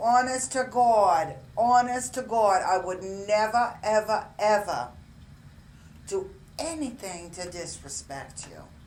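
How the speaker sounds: bad put-on New York accent, loud and high. Retelling a woman's promise to another woman, in a bad New York accent. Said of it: "I'm not doing a very good New Yorker accent".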